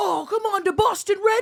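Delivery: very high, shrill, loud, failed New York accent. Describing passionate sports fans from New York and Jersey, attempting a New York accent. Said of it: "I can't do the accent".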